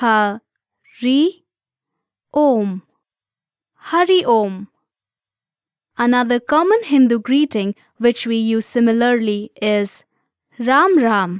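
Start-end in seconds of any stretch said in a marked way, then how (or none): 0.0-4.7 very slow speech, broken syllable by syllable. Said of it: "Let's break it down by syllable".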